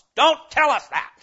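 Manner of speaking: indignant cry, very high and very loud. Preacher voicing the response when God spoke, acting out an indignant response. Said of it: "a voice of indignation in response".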